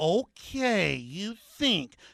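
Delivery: very slow, condescending, patronizing drawl. Act out how the other person will talk to you as if you're dumb: mock real slow talk. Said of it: "you're going to talk real slow, like you're real smart".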